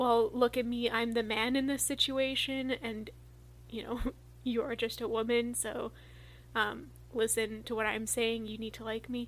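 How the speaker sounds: ordinary delivery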